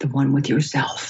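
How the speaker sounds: quiet, low, hushed whisper. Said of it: "she whispers".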